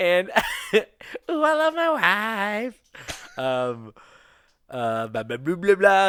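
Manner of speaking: talking through giggles. Talking to David on the show, giggling while talking. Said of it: "giggling too hard today".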